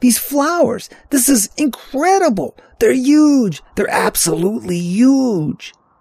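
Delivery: very high, dramatic, astonished exclamations. Narrator voicing Bobby as he holds up a tiny blossom: sudden dramatic outburst. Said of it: "his sudden dramatic outburst".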